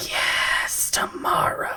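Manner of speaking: hushed, secretive, soft, breathy whisper. Game narrator voicing the flesh plunderer speaking to a player: whispering. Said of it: "The flesh plunderer whispers to you".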